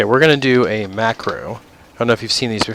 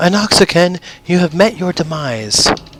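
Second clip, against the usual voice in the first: put-on high-pitched, girly female elf character voice; 8 semitones higher than usual. Gamer voicing a blood elf at a quest target, in a female blood elf voice. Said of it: "that was my blood elf voice".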